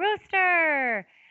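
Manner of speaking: loud, high yelling out.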